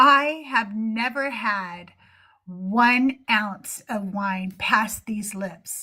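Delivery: very slow, proud, bold, boastful delivery. Retelling what the pastor said at church: imitating a proud, bold declaration. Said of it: "he said it so proudly and boldly".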